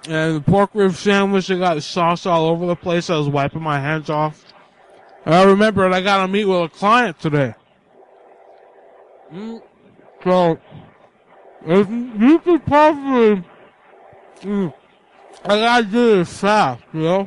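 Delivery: talking with a mouthful of food, chewing. Caller on a lunch break explaining a messy sandwich, talking with mouth full. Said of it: "you have a mouthful of food".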